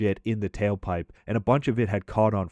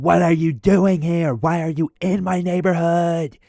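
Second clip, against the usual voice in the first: high-pitched, loud, freaked-out, out-of-control yelling; 8 semitones higher, 6 dB louder than usual. Retelling how Troy yelled at strangers in his neighborhood; imitating Troy yelling. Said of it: "Troy's still just yelling at them".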